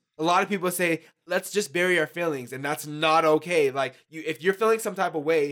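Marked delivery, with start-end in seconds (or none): none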